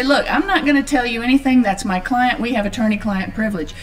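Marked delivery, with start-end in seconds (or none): none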